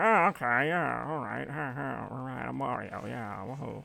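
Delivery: slow, rough, creaky, drawn-out rambling voice. Playing a kart race, imitating Wario. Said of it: "He'd be like".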